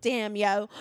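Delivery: put-on Baltimore accented speech. Trading a joke line with another speaker: Baltimore accent. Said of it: "I love a Baltimore, Baltimore accent, hun".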